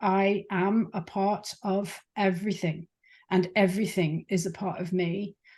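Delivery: ordinary delivery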